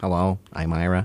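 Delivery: put-on public radio host voice. Introducing himself as a public radio host would: Ira Glass impression. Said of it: "That was actually my Ira Glass impression".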